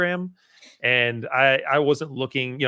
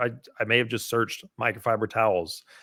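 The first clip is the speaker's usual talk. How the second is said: usual speaking voice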